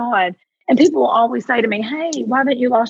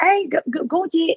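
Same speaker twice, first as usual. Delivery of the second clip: rough, put-on Australian accent, pitched higher; 6 semitones higher than usual. Retelling what a friend said at dinner, imitating an australian accent. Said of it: "in her beautiful Australian accent".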